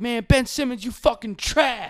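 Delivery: shrill, screaming, pitched very high. Retelling a fan walking through a parking lot: imitating a fan screaming. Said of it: "screaming about".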